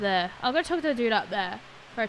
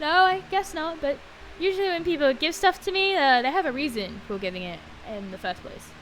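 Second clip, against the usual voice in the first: ordinary talk, nothing marked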